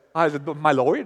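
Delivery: low English accent, on the word "Lord". Speaker tries saying the word with an English accent. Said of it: "put an English accent on it".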